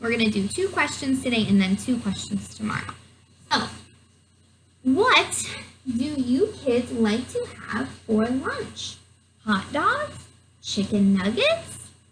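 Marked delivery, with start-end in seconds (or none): 4.8-11.8 upward inflection at end of hot dogs and nuggets. Reading aloud to kids, showing how a question sounds: rising question intonation. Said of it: "notice the inflection in my voice because I see a question mark".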